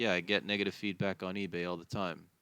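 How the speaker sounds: ordinary delivery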